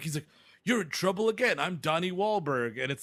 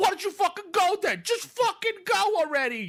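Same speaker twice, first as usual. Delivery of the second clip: mock, very high, drawn-out furious screaming; 3 dB louder than usual. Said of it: "he's screaming at this kid".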